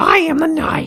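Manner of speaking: high, put-on character voice. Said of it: "she would go like".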